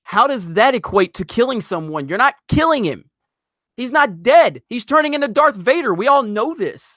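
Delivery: high, heated, exasperated shouting. Ranting about Rian Johnson's comparison of two trilogies: yelling. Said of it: "am I yelling too loud?".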